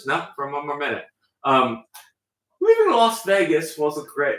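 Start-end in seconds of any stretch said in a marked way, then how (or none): 2.6-4.4 loud, fake, put-on British accent. Naming a favorite movie while joking around: put-on British accent. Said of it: "how to say that in a British accent".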